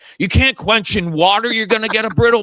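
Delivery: loud yelling, pitched very high. Speaker acts out himself watching a show, retelling yelling at the screen. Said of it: "I'm that guy yelling at the screen like".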